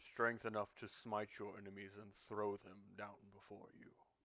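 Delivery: booming entity voice. The presence Tar Hawk answers a question put to it, in a booming voice. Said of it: "kind of a booming voice".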